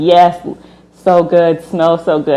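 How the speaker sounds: mock eager, delighted, drawn-out excited gushing. Retelling how everyone else reacted at the restaurant: imitating excited diners. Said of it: "Everybody else is super excited".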